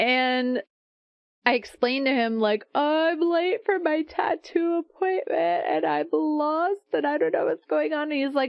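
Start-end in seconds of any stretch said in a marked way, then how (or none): 2.7-8.1 acted, high, words pushed out between sobs. Retelling what she told a man who asked if she was okay; reenacting own sobbing. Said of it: "telling them between my sobs".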